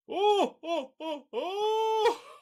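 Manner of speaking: put-on laughing voice. Finishing a put-on voice, drifting into a halfway Santa laugh. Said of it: "You went halfway Santa there at the".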